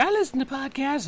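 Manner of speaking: soft, high-pitched put-on girlish voice. Podcaster quoting a nurse from a doctor's appointment: put-on girl voice. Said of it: "that's just my it's girl voice".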